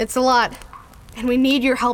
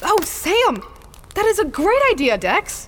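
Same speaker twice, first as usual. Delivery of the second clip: surprised, astonished, high and swooping pitch; 8 semitones higher than usual. A character reacts to Dex's idea about Sam, surprised. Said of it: "I don't know why you sound surprised".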